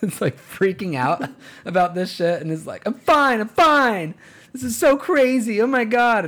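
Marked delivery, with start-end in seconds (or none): 2.9-6.2 very high, very slow, drawn-out, frantic meltdown. Retelling a male flight attendant on a plane, imitating a little meltdown. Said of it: "having himself a little meltdown".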